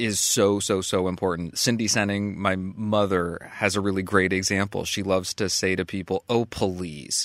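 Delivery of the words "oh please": put-on, hollow, insincere sarcastic politeness. Showing the insincere way people say the word: sarcastic insincere please. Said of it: "The sarcastic, the insincere".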